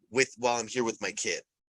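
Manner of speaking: normal talking voice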